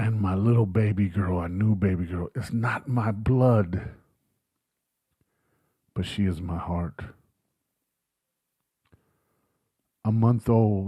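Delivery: speaking through tears. Speaking publicly and unable to stop crying, crying. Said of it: "I can't stop crying over her".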